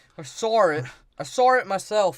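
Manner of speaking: put-on poorly done, slow working-class British accent. Acting out a British character's line from a retold scene: poor British accent. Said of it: "this is how a poor British person talks".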